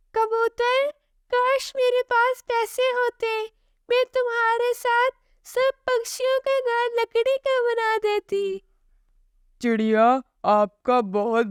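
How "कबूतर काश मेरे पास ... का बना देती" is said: very high storybook mother sparrow voice. A storyteller voices the sparrow speaking to the pigeon: mother sparrow character voice. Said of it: "अरे चिड़िया बहुत मेहनती है और वो ईमानदारी से काम भी करती है। / अरे चिड़िया बहुत मेहनती है और वो ईमानदारी से काम भी करती है। / मम्मा चिड़िया काम पर चली जाती है और पहले से ज्यादा काम करती है। / मम्मा चि".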